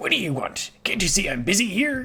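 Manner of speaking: cartoon pirate voice. Granting someone's request for an impression: Mr. Krabs impression. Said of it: "mister Krabs is kind of like a pirate voice".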